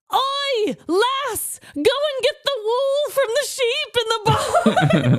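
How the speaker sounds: very high, slow, put-on olde-worlde Old English speech. Imagining Renaissance Festival staff answering her, put-on Old English speech. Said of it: "Just say it in Old English speech".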